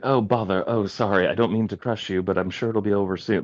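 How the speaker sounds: breezy, light, casually apologetic voice. Quoting a comic villain who apologizes while crushing someone: casually apologetic Ragdoll voice. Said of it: "the way he was so casual about it".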